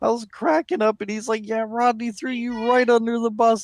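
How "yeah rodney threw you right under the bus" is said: put-on country hillbilly accent and voice. Retelling a phone call where the caller cussed him out: imitating a hillbilly accent. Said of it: "cussing me out with his hillbilly accent".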